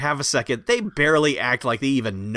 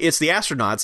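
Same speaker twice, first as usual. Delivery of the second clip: usual speaking voice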